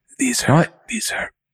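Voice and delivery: put-on ASMR-style voice, very high pitched. Jokingly showing the microphones to the other speaker: put-on ASMR voice. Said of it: "Should I go into my A S M R voice?".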